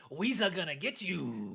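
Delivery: goofy, brutish put-on orc creature voice. Describing a forty K faction, quoting it in a goofy orc voice. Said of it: "It's like".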